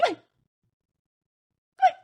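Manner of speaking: racing, very fast, very high-pitched delivery. Leading listeners in a speech exercise, saying it very fast. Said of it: "Let's say goodbye as fast as we can".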